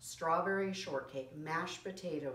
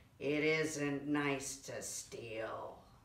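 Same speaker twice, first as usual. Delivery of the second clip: low, growling pirate voice; 4 semitones lower than usual. Reading a story, the narrator voices the boss pirate, growling. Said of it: "he stopped laughing and growled".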